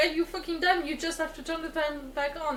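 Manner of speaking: plain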